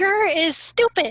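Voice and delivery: tiny, high, small shouting voice. A player casts minor illusion, a voice calling at Gur from the bushes: tiny shouting voice. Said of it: "a tiny voice that shouts in".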